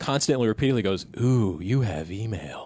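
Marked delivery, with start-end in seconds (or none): 1.2-2.7 very slow, sultry, sexy computer voice. Describing the America Online email alert, the speaker imitates it in a sexy voice. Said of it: "That's like really sexy".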